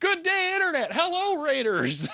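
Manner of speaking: very high voice talking through giggles. Greeting people who just arrived in a raid, laughing while talking. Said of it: "I'm laughing".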